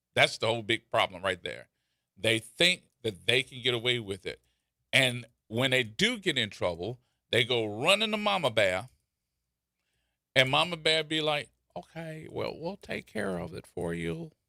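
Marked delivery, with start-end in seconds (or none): 11.7-14.3 rough, creaky put-on character voice. Imitating Mama Bear, who handles trouble for others: impression of Mama Bear. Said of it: "I know you like my impression".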